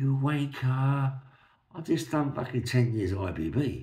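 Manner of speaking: very slow, high, loud, angry drawn-out shout. Retelling how a woman got out of a car: imitating a woman shouting. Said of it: "a woman gets out of the car and shouts to me".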